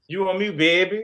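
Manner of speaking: put-on New Orleans accent, New Orleans style. Repeating the line when asked to rate the accent: New Orleans accent. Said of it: "rate [name]'s Norla, Nola accent".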